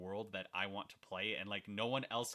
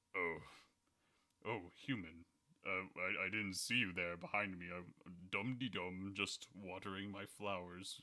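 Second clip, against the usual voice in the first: deep, really low, dignified, noble voice. Speaker demonstrates the game characters' voices; Asgore's really low noble voice. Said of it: "the really low noble voice".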